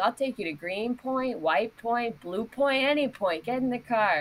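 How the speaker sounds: high voice, chuckling and laughing through every word. Retelling a taxi driver's offer of a ride: imitating a laughing taxi driver. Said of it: "he's laughing".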